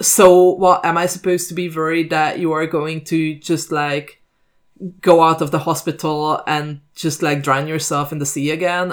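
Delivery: ordinary delivery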